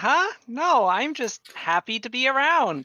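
very high, very loud forced cheer, swooping. Voicing a character the party finds suspicious of smiling, forced cheerful character voice.

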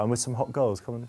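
soft, half-voiced, hushed stage whisper. Retelling an invitation to come and dance: imitating a half-whisper. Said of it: "I just whisper".

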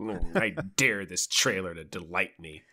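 sour, grumpy, cynical, challenging tone. Picturing another speaker clicking play on a trailer: imitating grumpy Dave. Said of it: "picturing Grumpy Dave clicking play on this trailer".

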